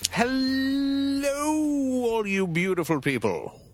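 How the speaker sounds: very high, fancy, drawn-out host voice. Podcast co-host greets listeners after the introductions, in a fancy voice. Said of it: "You sound very fancy".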